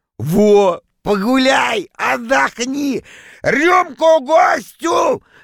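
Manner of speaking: glad, very slow, rising joyful shout. He urges the hesitant narrator to stay and join the celebration: joyful shout across the hall. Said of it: "радостно закричал он на весь зал".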